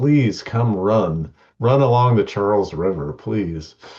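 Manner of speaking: put-on screaming, mock pleading shout. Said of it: "the city is just screaming".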